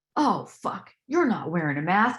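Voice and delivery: acted, irritated, angry, annoyed woman's outburst. Retelling a woman at a market reacting to no mask: imitating an angry woman. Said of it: "she was so mad".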